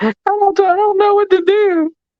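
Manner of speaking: put-on weepy, distraught, high crying voice. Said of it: "his mama on there crying".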